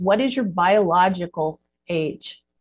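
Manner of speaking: ordinary talk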